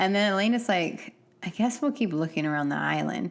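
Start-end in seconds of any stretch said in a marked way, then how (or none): 1.4-3.3 play-acted, mildly irritated, fed-up, put-upon tone. Retelling what a TV character says, imitating an annoyed tone. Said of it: "She says it like she's kind of annoyed".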